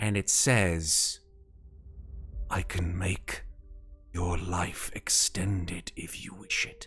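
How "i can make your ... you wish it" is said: whispering voice, lower and quieter. Game master voices a voice speaking down from the clouds; whispering voice from the clouds. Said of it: "just sort of like a whispering voice".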